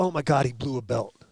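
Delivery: normal talking voice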